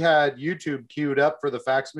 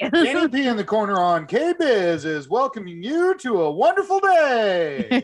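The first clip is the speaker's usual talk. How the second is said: put-on radio DJ announcer voice; 7 semitones higher than usual. Joking about radio call-in winners, one does a put-on radio announcer voice. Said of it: "My best radio voice impersonation right there".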